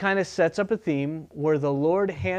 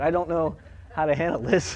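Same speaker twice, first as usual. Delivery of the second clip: normal talking voice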